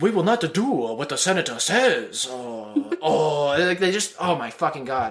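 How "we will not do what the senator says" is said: stupid, ridiculous put-on Chinese accent. Mocking how film aliens talk, quoting one of them: Neimoidian stupid Chinese accent. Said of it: "They talk with a really ridiculous, like stupid Chinese accent. They go like".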